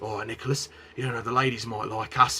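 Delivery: put-on London Cockney accent. Recounting a man who suddenly slipped into an accent, Cockney accent. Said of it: "he slipped into this Cockney accent like".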